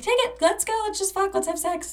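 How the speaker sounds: squealed out very high and eager.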